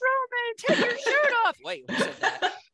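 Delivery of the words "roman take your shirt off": put-on crowd shout, higher. Retelling fans answering a wrestler from the crowd: imitating a fan yelling. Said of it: "That wasn't me yelling".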